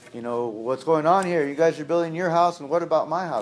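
loud, high-pitched, upset scolding tone.

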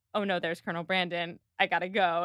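ordinary talk

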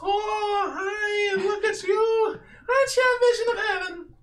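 put-on very high, very drawn-out little boy voice. Voicing a little boy greeting a player who walks up: voicing a little boy. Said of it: "he's, is a live little boy. And when you walk up, he goes".

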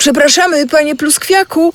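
very high-pitched, shouted calling out. One of the friends calls out to a small bug drinking sap nearby: shouted. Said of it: "krzyknęła".

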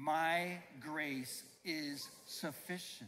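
deliberate, very slow, emphatic, with conviction. A speaker leads listeners in repeating a phrase, saying it like they mean it. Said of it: "let's say it like we mean it".

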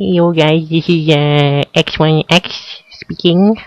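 put-on squeaky young-kid voice. Mocking kids whose voices haven't broken yet, in a squeaky young-kid voice. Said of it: "squeaky voice".

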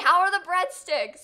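very loud, high, bellowed yell. Retelling how a loud guy greeted someone holding breadsticks: imitating someone yelling.

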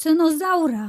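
sudden high cry. A master remembers his bird left in a burning house; crying out. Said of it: "Krzyknął".

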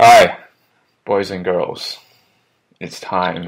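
unenthusiastic, unmotivated delivery with no drive. Opening the weekly pickup motivation podcast, not motivated. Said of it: "You don't sound very motivated".

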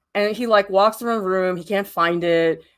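ordinary talk, nothing marked

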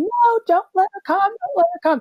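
acted very high, shrill, shrieking scream. Speaker retelling a past moment cowering in a corner, retelling a scream. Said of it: "and I'm screaming".

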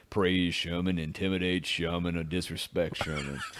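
very low, deep, soft, hushed character voice. Speak as you picture the fried chicken restaurant's colonel, in a Colonel Sanders voice. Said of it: "Why do you sound like Colonel Sanders?".

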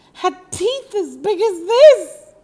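loud, squeaky, very high-pitched cry.

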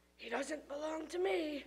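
quiet, under-breath muttering. At a wedding, a father says something about a boy, under his breath. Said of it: "said Dad under his breath".

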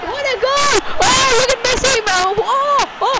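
ecstatic, high, loud shouting.

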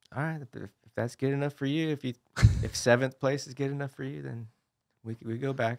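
smiling, not-angry tone. Quoting how she responds to a poor result, imitating a smiling delivery. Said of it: "she says it with a smile on her face".

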